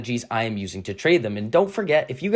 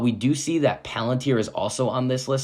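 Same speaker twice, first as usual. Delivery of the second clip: plain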